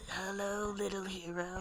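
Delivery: sinister, hushed, evil, ominous voice, sounding far off. Describing a voice in a dream speaking from the distance, retelling an evil ominous voice. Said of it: "this evil ominous voice like saying something to him".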